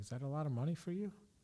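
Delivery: mock casual, unbothered, nonchalant, offhand tone. Retelling the boss's reply to the price paid for a watch: imitating Mike's nonchalant tone. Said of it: "very nonchalant".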